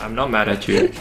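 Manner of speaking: ordinary talk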